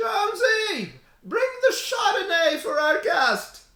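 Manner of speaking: piercing, shrill, very high-pitched call. Narrating a scene, voicing a mother calling Jonesy to bring wine, in a shrill voice. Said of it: "a shrill voice".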